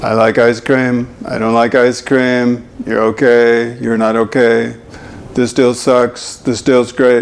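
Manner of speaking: low, flat, emotionless, one-note monotone. Explaining voice problems, demonstrating Mister and Missus Monotone with flat monotone delivery. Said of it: "Mister and Missus Monotone".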